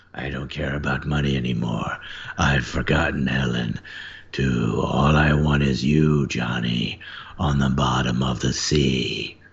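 very low, rough, gravelly voice. Performer voices a character speaking to Johnny, gravelly voice. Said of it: "I kind of got my gravelly voice back".

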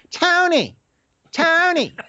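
put-on very high, girlish voice calling out. Mocking an irritating voice from a scene where he walks in on dying Tony, use a put-on girly voice. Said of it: "he's just got a girly voice".

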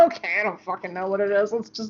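shrugged-off delivery. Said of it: "just being like".

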